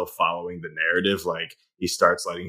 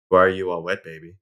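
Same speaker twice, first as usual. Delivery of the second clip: cold deadpan put-on voice; 4 dB louder than usual. Quoting a line from a film scene: cold Ben Kingsley delivery. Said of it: "just looks at him coldly and just says".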